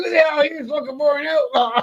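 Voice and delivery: shrill, very high hollered yell. Telling a story about a man called Kez stomping in: retelling a yell. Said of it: "He yells".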